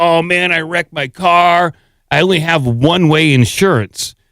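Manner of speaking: normal talking voice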